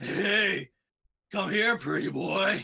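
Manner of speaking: very distinct manly voice. Narrating a scene where a voice is heard after figures close the gates: distinct manly voice. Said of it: "a very distinct manly voice go".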